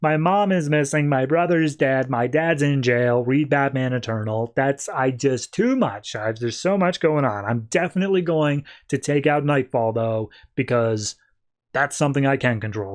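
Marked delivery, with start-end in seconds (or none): none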